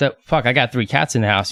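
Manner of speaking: ordinary talk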